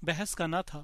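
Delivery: plain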